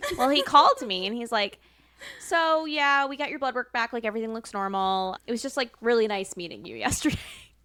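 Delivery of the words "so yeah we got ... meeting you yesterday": plain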